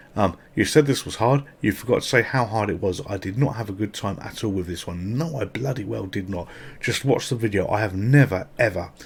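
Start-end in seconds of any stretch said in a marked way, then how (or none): none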